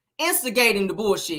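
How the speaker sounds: ordinary delivery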